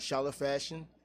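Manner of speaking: normal talking voice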